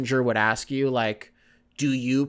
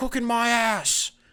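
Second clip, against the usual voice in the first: angry outburst, spat out, pitched very high; 9 semitones higher than usual. Retelling a man's reply to a woman's cooking: mock-angry Gordon Ramsay impression. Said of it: "angry Gordon Ramsay".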